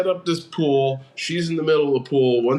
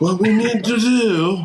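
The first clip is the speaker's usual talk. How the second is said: put-on old-school British film-star voice, pitched higher; 8 semitones higher, 4 dB louder than usual. Playing Mister Fantastic, asked what to do about the bells, in a James Mason impression. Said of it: "had a James Mason impression".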